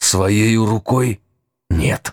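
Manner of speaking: hissing, ghostly voice. A ghost, asked whether the girl killed him, answers: hissing. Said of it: "прошипел призрак Брыкина".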